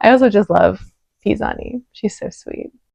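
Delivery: getting emotional, misty-eyed, moved. Watching the judges comment on a show, getting emotional. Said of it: "I'm getting like kind of emotional".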